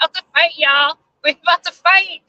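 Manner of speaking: high-pitched talk broken up by giggles. Speaker addressing listeners, apologizing for giggling; giggling while talking. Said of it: "So sorry I'm giggling".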